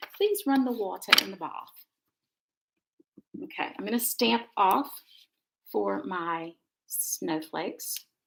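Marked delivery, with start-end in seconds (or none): 0.2-1.5 grand, regal voice like royalty. Retelling a little girl asking her dad to run the bath: Queen Elizabeth voice. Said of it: "it was like she was um".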